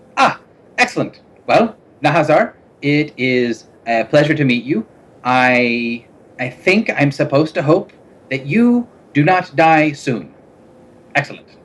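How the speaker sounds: brightening up. Voicing a masked figure answering a named stranger: perking up. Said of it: "perks up a little bit".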